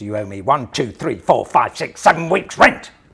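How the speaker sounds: very loud, stamping, forceful voice, rising pitch. Retelling coming on stage early in a play, with a very loud demand. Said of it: "demanded in a very loud voice".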